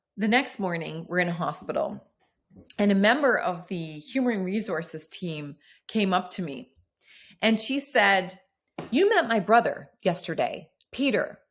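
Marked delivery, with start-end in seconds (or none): 8.9-11.3 acted solemn, weighty, very serious grave tone. Retelling what a human resources team member said, imitating someone serious. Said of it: "she said it in a very serious way".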